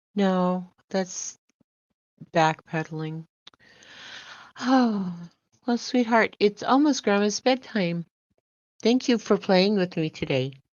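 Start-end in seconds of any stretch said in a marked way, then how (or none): 4.6-10.5 synthetic AI voice, like a computer. Saying it's Grandma's bedtime and thanking someone for playing: mock AI voice. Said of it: "you sounded A I there".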